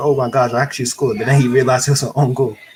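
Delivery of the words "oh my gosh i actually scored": ordinary talk, nothing marked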